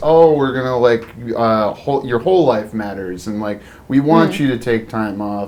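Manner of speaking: ordinary talk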